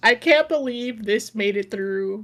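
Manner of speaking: ordinary talk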